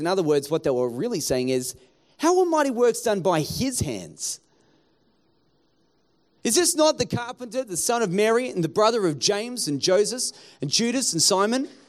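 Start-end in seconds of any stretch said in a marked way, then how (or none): 2.2-4.4 strong, heavy stress on the word his. Adding their own emphasis to a Scripture verse: stress on his. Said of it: "I would emphasize the word his".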